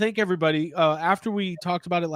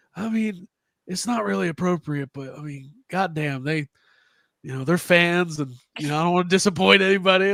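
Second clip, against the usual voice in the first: raspy southern accent, put-on. Retelling what a wrestler said about fans at his house: raspy Southern voice as Arn Anderson. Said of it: "he's got that kinda raspy Southern voice".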